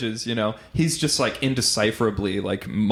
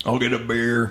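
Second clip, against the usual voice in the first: ordinary talk, nothing marked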